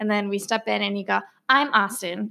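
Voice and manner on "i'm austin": firm, definite put-on voice. Retelling how the listener first introduced himself: Austin's specific voice. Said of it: "you always say it in, like, this specific voice".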